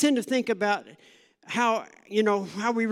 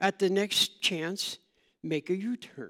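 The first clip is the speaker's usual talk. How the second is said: unruffled, very calm, even sat-nav voice; 4 dB quieter than usual. Describing what it tells you in the car, imitating a very calm manner. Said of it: "It tells you in a very calm manner".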